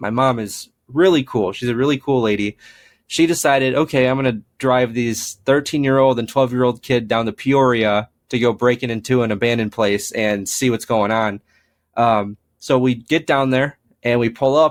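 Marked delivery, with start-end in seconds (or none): none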